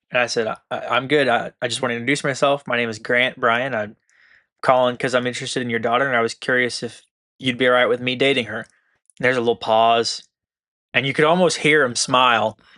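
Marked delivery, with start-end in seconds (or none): none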